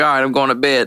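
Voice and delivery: normal talking voice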